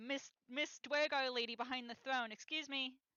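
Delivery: high, very loud calling out. Calling out to a woman hiding behind a throne: yelling out to someone. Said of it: "yell out".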